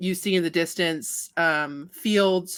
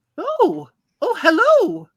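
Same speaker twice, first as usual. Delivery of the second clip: put-on little old lady voice, much higher and louder; 14 semitones higher, 7 dB louder than usual. Voicing a woman reading a book who looks up at visitors, little old lady voice. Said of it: "a little old lady sitting there".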